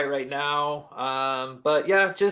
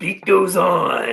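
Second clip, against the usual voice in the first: loud, booming, slow, drawn-out wrestling promo voice; 2 semitones higher, 6 dB louder than usual. Imitating Macho Man from old eighties interviews: Macho Man interview voice. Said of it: "He's just like".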